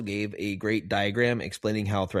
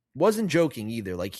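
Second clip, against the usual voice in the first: ordinary delivery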